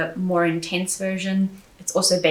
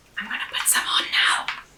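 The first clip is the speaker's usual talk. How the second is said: breathy, hushed whispered aside; 2 semitones higher, 4 dB quieter than usual. Reviewing a hand cream while putting some on: whispering. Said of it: "I don't know why I'm whispering".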